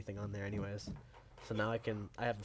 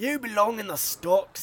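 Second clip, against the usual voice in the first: slow, booming Scottish accent, failed Australian accent attempt; 11 semitones higher, 10 dB louder than usual. After claiming a pretty good Australian accent, saying his line in a failed Australian accent. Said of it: "like Scottish".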